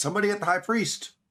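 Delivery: very high, shrill, piercing yell. Voicing an old man calling for help: yelling. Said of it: "you hear him yell".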